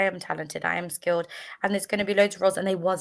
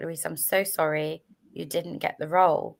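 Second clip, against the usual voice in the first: imitated sad voice. Retelling the agent's phone call about the role, imitating a sad voice. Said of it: "He sounded so sad".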